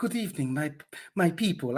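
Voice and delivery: put-on Eastern European accent. Asking a woman present about the voice she used in a movie: imitating Wendy Lee's Eastern Bloc voice. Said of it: "the Eastern Bloc voice".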